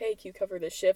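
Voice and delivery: ordinary talk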